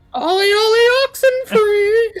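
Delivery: piercing, shrill, very high-pitched yell. In the game, a voice carries over the water through the mist: Wick Moss yelling. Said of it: "to where I'm yelling".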